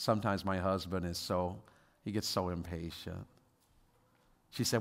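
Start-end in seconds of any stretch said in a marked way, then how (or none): 0.0-3.3 mock very low, gentle, sweet tone. Retelling what a woman said about her husband: imitating a sweet tone. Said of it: "she said this so sweetly".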